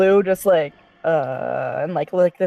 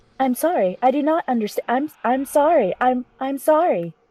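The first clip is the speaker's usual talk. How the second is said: high, stuttering, glitching buffering robot voice; 7 semitones higher than usual. Playing a broken character stuck rebooting, the speaker answers in a buffering robot voice. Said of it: "I can do a buffering voice".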